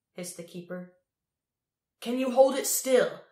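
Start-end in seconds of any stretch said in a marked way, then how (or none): 2.0-3.1 very loud, high-pitched yelled shout. A man calls out to his companion during the fight with the keeper, shouting. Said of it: "shouted Crow".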